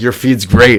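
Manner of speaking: put-on sarcastic voice. Retelling a painter's sarcastic message: sarcastic imitation of Wes Benson. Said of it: "'cause he was being sarcastic".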